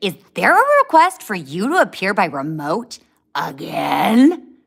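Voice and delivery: furious, very loud angry voice. Retelling a judge's question in court, imitating an angry judge. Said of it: "she got so pissed. She's like".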